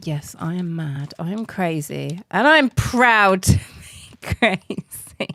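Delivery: put-on dog character voice. The speaker channels the dog, speaking in Bosley's voice. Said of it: "This is Bosley's voice, and he talks like this".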